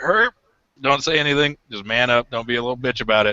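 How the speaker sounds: plain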